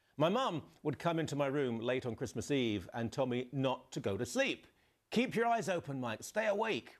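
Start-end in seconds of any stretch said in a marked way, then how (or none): 5.1-6.9 put-on Cockney accent, pitched up. Act out your mum coming into your room late on Christmas Eve, in her Cockney accent, put on. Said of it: "reverse psychology in a Cockney accent".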